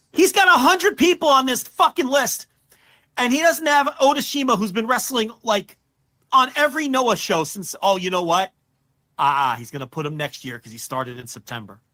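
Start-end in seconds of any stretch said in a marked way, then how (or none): 0.2-7.8 angry yelling, higher pitched and louder. Complaining that a wrestler is missing from a list: yelling angrily. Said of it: "I'm sorry for yelling at you".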